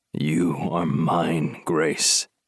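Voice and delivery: very low growled voice. Reading a novel, the narrator voices a man speaking into the heroine's ear, growling. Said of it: "he growled into my ear".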